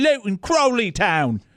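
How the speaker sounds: put-on English accent, pitched a bit high. Showing how an Englishman says team names to the remote: English accent. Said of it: "an Englishman vacationing".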